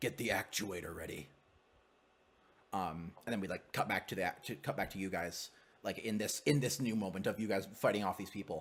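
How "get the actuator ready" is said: robotic, machine-like, deep, heavy, weighty tone. Describing a scene, a voice from a screen in some room: deep mechanized heavy voice. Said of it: "a very mechanized, deep, heavy voice".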